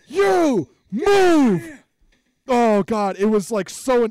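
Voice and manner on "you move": acted yell, much higher, louder. Recounting a man screaming at a little girl who stared at him: retelling a yell. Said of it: "He just yells".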